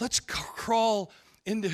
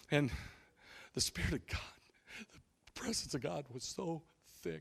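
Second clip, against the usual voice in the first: put-on teary voice, much quieter; 3 semitones lower, 13 dB quieter than usual. Retelling a man up there getting moist and teary, imitating him tearing up. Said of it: "He got all moist and teary".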